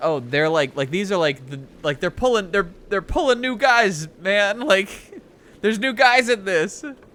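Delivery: loud eager rush of excitement. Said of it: "I was like".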